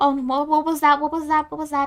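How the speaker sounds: frantic, startled, panicked monster-voice chatter. Game master voicing kobolds reacting to a distant explosion, panicking. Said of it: "start panicking and looking around wildly".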